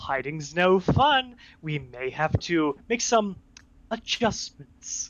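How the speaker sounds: loud god-like voice. During a tabletop game session, speaking as the celestial voice to the players. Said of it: "Celestial voice says".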